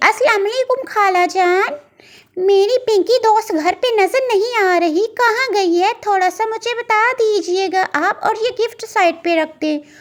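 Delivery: high, friendly, polite, courteous cartoon bird voice. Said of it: "इतने में [name] चिड़िया की दोस्त [name] चिड़िया आ जाती है।".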